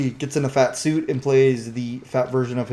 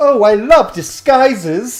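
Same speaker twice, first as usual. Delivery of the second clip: put-on young girl voice, higher, louder; 9 semitones higher, 8 dB louder than usual. Retelling a scene from a Narnia book: imitating a twelve-year-old girl. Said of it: "the little, like, twelve-year-old girl goes".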